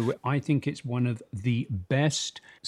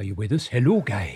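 put-on Indian accent; 3 semitones lower, 3 dB louder than usual. Asking whether someone is there, in an indian accent impression. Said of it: "That was a very good Indian impersonation".

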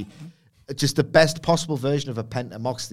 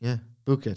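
flat deadpan put-on voice. Retelling how a man at the bar mimicked a wrestler, doing a Cassidy deadpan impression. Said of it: "mimicked Cassidy's deadpan and went".

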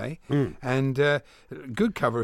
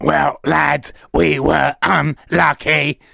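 campy mechanical alien voice; 3 semitones higher, 11 dB louder than usual. A host trying out a voice for the listeners, camp Dalek voice. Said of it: "Sound like a camp Dalek".

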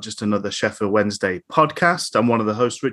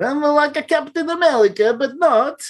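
put-on Russian accent, much higher pitch. Mocking people who do Russian accents in films, speaking in a fake Russian accent. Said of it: "people doing Russian accents".

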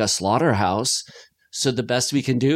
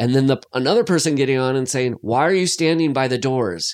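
ordinary talk, nothing marked

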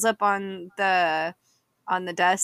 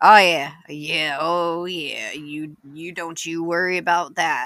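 easygoing small-town sheriff voice, casual and reassuring; 3 semitones lower, 3 dB louder than usual. Voicing the sheriff after swallowing his ribs: voicing Sheriff Cletus. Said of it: "shakes his head and swallows and goes".

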